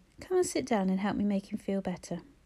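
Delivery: ordinary delivery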